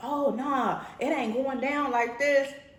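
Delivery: shrill screaming. Retelling people pulling into the driveway, imitating people screaming. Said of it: "screaming like".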